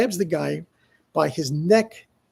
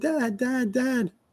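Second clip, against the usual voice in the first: acted-out, high, repeated screaming; 7 semitones higher, 4 dB quieter than usual. Retelling calling for Dad during a fight, retelling screaming for Dad. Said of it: "And I'm screaming".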